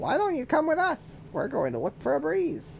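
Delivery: very high, sing-song, swooping duck voice. Reading a character's line aloud while trying out voices: duck voice. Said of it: "I feel like this is a duck voice".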